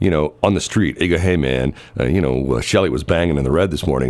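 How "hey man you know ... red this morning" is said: ordinary talk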